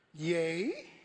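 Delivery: put-on sarcastic serpent voice. Acting out the serpent questioning god's word: imitating the serpent's sarcasm. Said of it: "Look at his sarcasm".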